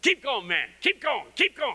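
high, rousing, encouraging yells. Describing the men in the speaker's church standing and pointing, imitating them yelling. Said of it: "stand up and point at you and go".

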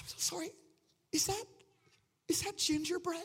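weepy, tearful, crying voice. Retelling what a stranger said through tears: imitating a woman crying. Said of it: "And she's crying".

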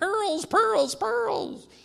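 very high, tiny, rough, squeaky cartoon voice. Speaker retelling a cartoon where Daffy Duck is shrunk, tiny little Daffy Duck voice. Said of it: "you hear him in the tiny little voice".

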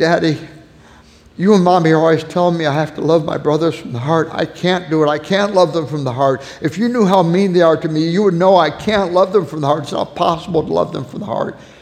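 put-on tearful little girl's voice, sobbing through words. Retelling what a crying daughter said at bedtime: imitating a sobbing child. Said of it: "she's sobbing".

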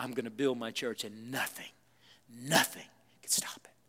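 put-on firm resolve. Quoting a scriptural declaration to listeners, acting out firm resolve. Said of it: "you hear the resolve in Jesus' voice?".

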